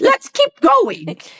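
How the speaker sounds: put-on British accent. Retelling a Monty Python sword fight scene: Monty Python British accent. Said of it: "the guy in his British says".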